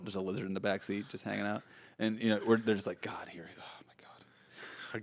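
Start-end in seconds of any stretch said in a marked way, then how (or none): 3.0-5.0 weary exasperation, whispered and drawn out, very slow. Acting out the thinking brain on a road trip: acting exasperated, like a weary dad. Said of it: "exasperated dad".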